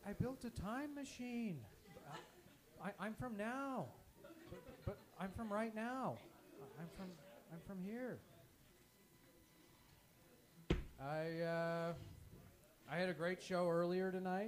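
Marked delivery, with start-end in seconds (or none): 0.1-8.2 halting, stumbling put-on celebrity voice. Doing a comedy bit on stage: Owen Wilson impression. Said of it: "How about an Owen Wilson impression?".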